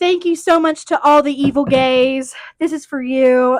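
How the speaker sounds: very loud, belted-out delivery. Retelling an actress's Emmy thank-you speech: Jennifer Coolidge impression. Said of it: "She kinda nailed that impression".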